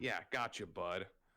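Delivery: sarcastic tone. Answering another character's story about wild magic making them yell: sarcastic tone. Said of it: "after his sarcastic tone".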